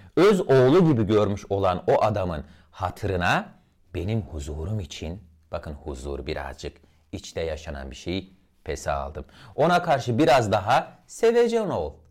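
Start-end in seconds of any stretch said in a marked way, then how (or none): 9.6-11.9 pitch rising to mid-high, getting louder. Demonstrating intonation on a quoted line, pitch rising to mid-high. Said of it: "Sevecen, bakın o orta ton ve üstlere çıktım".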